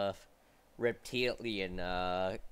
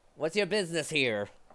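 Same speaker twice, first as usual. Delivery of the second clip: put-on Imperial-accented voice; 6 semitones higher than usual. Voicing a soldier yelling from the tree line: thick Imperial accent. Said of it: "In a thick Imperial accent".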